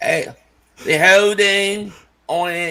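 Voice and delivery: bad put-on Southern drawl, loud and very slow. Imitating a referee calling a holding penalty, bad put-on Southern accent. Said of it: "that's my southern accent".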